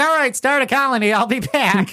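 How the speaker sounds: breezy, offhand sea captain voice, high pitched.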